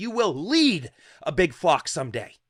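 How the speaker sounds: put-on loud, full-force screaming at top of lungs. Retelling being shaken as a child by grandpa: imitating grandpa screaming. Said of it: "screaming at the top of his lungs".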